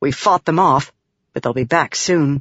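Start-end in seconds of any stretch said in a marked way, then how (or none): none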